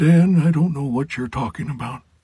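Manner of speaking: put-on very high, elderly professor character voice. Demonstrating his different character voices, the speaker does the older man professor voice. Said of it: "it's the professor, and he sounds like this".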